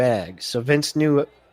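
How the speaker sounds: ordinary delivery, nothing marked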